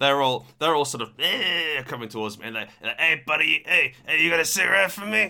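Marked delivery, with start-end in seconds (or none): 3.0-5.3 loud, high-pitched, caricatured, put-on Spanish accent. Retelling creatures coming towards him: imitating a racist Spanish accent. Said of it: "got racist Spanish accents".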